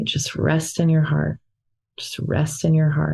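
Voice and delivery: gentle, inward, self-soothing repeated mantra. Demonstrating what they repeated to themselves, the speaker uses a very soft voice. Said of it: "I'm saying it so softly".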